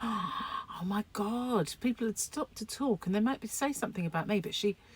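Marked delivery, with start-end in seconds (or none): 0.0-1.7 shocked, exclaiming voice. Telling how the speaker reacted when their mother was rude to people: retelling a shocked exclamation. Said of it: "and I'd be like".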